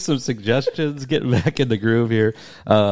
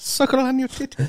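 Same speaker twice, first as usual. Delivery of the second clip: very high, piping put-on character voice; 14 semitones higher, 3 dB quieter than usual. Recalling a golf outing, quoting someone's line in a Mary Poppins voice. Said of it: "say in a Mary Poppins voice".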